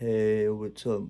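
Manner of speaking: low, dull, flat monotone. Imitating how a guy introduced himself: flat monotonous voice.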